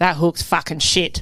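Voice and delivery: blunt, direct, verdict-like delivery. Retelling what Glenn said about a hook: imitating Glenn's voice. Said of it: "That actually sounded like his voice".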